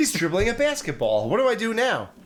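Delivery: high, baffled, confused bad guy voice.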